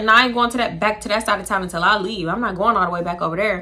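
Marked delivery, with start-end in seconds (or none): none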